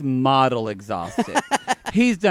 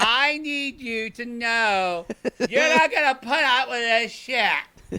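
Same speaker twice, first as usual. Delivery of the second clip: put-on loud, drunken-sounding yelling, pitched higher; 9 semitones higher than usual. Imitating Raina giving loud advice at the bar: imitating Raina yelling advice. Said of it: "that voice that never shuts up and yells at you".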